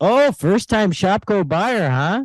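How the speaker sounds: put-on Upper Midwest Minnesota accent. Act out what she said to you while you were checking out at the store, put-on Fargo accent. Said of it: "bitching about the Fargo accent".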